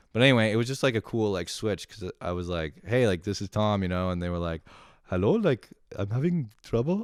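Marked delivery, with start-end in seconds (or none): 5.1-7.1 high-pitched, badly done, put-on Indian accent. Retelling how the people on the other end answered; bad indian accent. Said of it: "I can't do an Indian accent".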